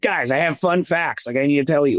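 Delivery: acted-out half-shout, a mild yell. Retelling what Kyle said in the suite last night: imitating Kyle yelling. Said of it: "just yelling".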